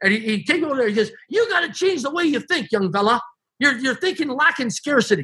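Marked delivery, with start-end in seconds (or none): 1.3-5.2 put-on hard hollering, high-pitched yell. Retelling what Harry said to a young man: imitating someone yelling. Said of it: "And he's yelling at me".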